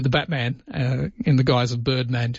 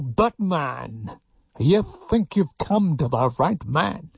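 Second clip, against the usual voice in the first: muffled masked villain voice, higher and slower; 2 semitones higher than usual. Speaker does the voice with hands over the face as a mask: Bane voice. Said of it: "I can quite do the voice".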